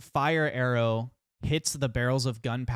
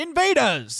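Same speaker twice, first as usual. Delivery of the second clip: very high, loud, alarmed shout; 14 semitones higher, 7 dB louder than usual. Game master voicing someone inside the keep who hears invaders; shouted alarm cry. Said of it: "you do hear someone inside go".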